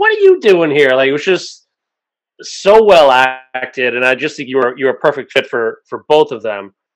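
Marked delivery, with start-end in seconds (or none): 0.0-0.9 sarcastic-sounding yell. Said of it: "snarkily yell at him".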